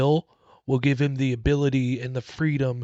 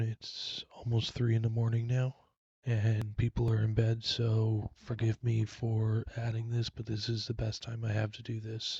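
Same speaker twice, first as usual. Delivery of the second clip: lowered voice, much quieter; 3 semitones lower, 9 dB quieter than usual. Recording late at night while people are in bed, speaking in a lower tone. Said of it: "so I'm speaking at a lower tone".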